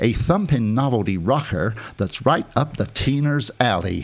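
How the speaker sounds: put-on American accent. Show host reading out a Cashbox quote, in an American accent. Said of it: "I'll do it in an American accent".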